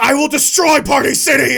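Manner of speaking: high, loud furious shout.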